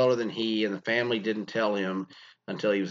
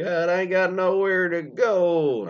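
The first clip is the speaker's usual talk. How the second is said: put-on high, slow, drawn-out old-woman voice; 8 semitones higher, 5 dB louder than usual. Acting out a grandma's reply in a story, old woman voice. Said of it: "I don't know why she talks like an old woman".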